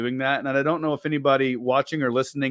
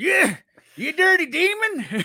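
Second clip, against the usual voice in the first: put-on very high-pitched old-timer prospector voice; 3 dB louder than usual. Speaker demonstrating invoking the old prospector against a ghost, in an old prospector voice. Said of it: "invoke the old prospector".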